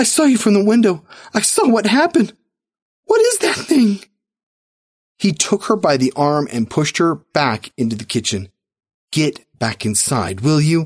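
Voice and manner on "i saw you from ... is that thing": very high, quavering, trembling voice, rising. His wife, who watched from the window, speaks to him: trembling voice. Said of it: "Her voice trembled when she spoke".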